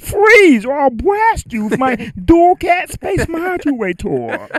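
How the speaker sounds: very slow cartoon alien voice, every word drawn out. Doing an impression of Marvin the Martian for the others: Marvin the Martian voice. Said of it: "he would say".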